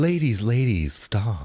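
put-on joking camp voice.

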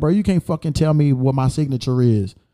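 normal talking voice

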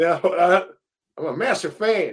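shouted in a bad fake American accent. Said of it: "I can't do an American accent".

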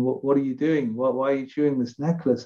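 ordinary talk

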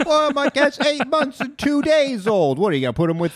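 very high-pitched voice. In an improv bit about old cats in a kitten competition, imitating the other person's voice. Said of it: "I don't know why I did your voice".

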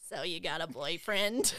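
low, nerdy, dweeby dude voice. Taking a turn performing the same short scene, opening line: dweeby guy voice. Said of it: "why did mine sound so dweeby?".

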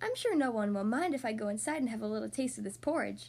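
plain reading voice

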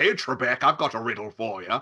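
put-on Scottish accent. Quoting a famous sketch, Darrell Hammond's Sean Connery impression. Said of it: "Daryl Hammond Sean Connery from S N L".

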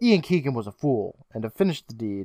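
ordinary talk

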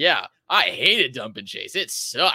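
plain, unembellished delivery. Retelling what a player said about dump and chase: imitating John Klingberg. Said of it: "He's like".

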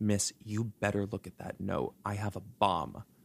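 mock-whispering. Retelling the hijacker calling the woman back over, imitating a whisper. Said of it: "he whispers and he goes".

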